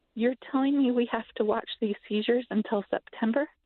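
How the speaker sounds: fast, stunned, sincere, genuinely shocked. Retelling what she asked on the phone when told about the wait, retelling her shocked question. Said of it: "shock in my voice".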